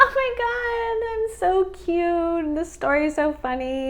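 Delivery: high, drawn-out, giddy gush bubbling with laughter. Mocking a woman from a video who laughs giddily: mocking giddy laughing voice. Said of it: "laughing, like, giddily".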